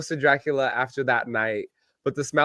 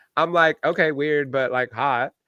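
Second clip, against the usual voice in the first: ordinary delivery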